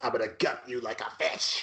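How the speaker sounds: menacing put-on killer voice. Doing the Scream killer's voice for the others: Scream Ghostface voice. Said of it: "in that voice".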